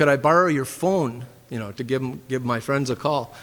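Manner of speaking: plain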